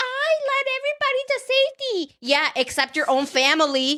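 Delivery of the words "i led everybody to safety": mock smug, proud, very high-pitched voice. Retelling someone boasting after a fire drill: imitating Susie sounding proud. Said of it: "all fucking proud".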